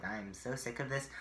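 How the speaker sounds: ordinary delivery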